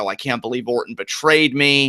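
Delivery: ordinary talk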